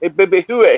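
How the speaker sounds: put-on French-accented voice. Retelling a man from Montreal calling him Baby Huey: French accent. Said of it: "with that French accent".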